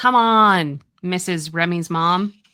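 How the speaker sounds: very slow, loud, fed-up, frustrated dog voice. Voicing a frustrated dog who just barked: voicing the dog Zuko, frustrated. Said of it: "Zuko let out a little barky bark. / He's like".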